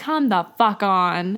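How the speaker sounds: put-on bitter, fed-up cartoon voice, angry, jaded exasperation. Acting out a kids' show character fed up with lessons: put-on angry, jaded character. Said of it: "a little less angry and jaded".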